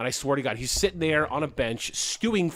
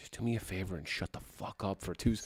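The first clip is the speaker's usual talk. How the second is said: mock flat, very hushed, very quiet deadpan delivery; 7 semitones lower, 12 dB quieter than usual. Retelling what a man on a bench said when the speaker kept talking, imitating a deadpan retort. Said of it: "like deadpan to me".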